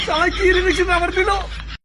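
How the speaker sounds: high, sharp, pained yelp.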